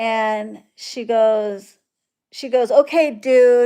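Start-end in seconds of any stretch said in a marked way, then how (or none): 2.7-3.7 put-on rude tone with attitude, louder. Retelling a customer's rude message: imitating a customer with an attitude. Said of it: "with an attitude".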